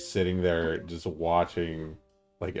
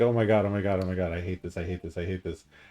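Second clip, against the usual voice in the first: put-on panicked, freaking-out voice. Retelling waiting for a vaccine shot: imitating own past panic. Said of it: "still freaking out".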